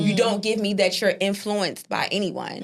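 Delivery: ordinary delivery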